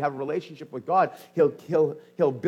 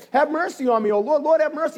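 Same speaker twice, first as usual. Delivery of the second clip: very high crying out, pleading and begging; 10 semitones higher, 4 dB louder than usual. Retelling how the woman cried after him: acting out crying out for mercy. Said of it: "She's crying after him".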